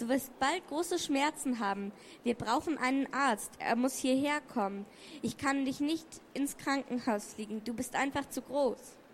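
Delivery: ordinary delivery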